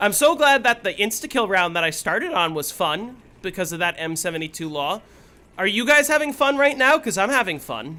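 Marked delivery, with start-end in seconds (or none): 5.6-8.0 heavy, high sarcasm, as sarcastic as possible. Playing a game round, asking the audience; as sarcastic as possible. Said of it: "I say as sarcastically as possible".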